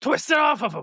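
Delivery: put-on very high-pitched, gruff old-man voice. Describing someone yelling from the crowd during an arm bar: gruff old man voice. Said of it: "There's always an old man gruff voice".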